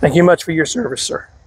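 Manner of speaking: voice cracking and breaking up. Reading out a list of veterans and thanking each one; voice cracking. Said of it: "the way my voice is cracking up".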